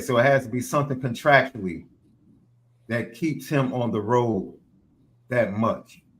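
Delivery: plain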